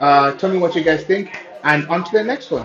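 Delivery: very loud, nearly shouting. Testing how the mic picks up a voice over background noise, talking a little louder. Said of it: "I'm going to talk just a little bit louder".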